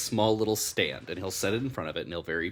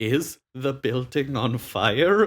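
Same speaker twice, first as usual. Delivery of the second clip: furious, very angry, high-pitched and loud; 6 semitones higher, 7 dB louder than usual. Narrator voices a tiny halfling man opening his door, very angry. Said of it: "very angry halfling man in a sleeping robe".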